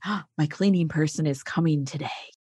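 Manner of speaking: put-on whisper. Describing the shame around outsourcing housework: imitating people whispering. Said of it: "you hear people whispering".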